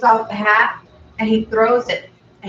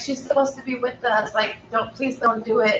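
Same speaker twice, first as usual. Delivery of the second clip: put-on weeping girl voice, higher and quieter; 3 semitones higher, 4 dB quieter than usual. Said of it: "weeping and crying".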